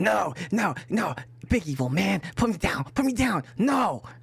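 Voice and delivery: little, high-pitched, squeaky creature voice. Game master voicing a kobold that a player has picked up: kobold voice. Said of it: "a very familiar kobold voice to you".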